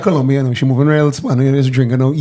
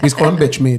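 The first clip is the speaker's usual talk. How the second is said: ordinary talk, nothing marked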